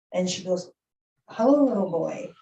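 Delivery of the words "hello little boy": sugary, sweet woman's voice. Telling a story, speaker voices a woman greeting a little boy, sweet soft female voice. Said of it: "she had a really sweet, soft voice".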